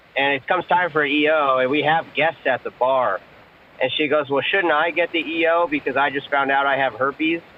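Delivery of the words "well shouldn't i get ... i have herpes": ordinary talk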